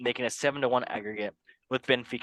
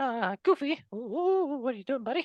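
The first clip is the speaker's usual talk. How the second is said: very high-pitched little cartoon mouse voice; 13 semitones higher than usual. Speaker starts on match day twenty-six results, in a Mickey Mouse voice. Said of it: "Let us talk like Mickey Mouse".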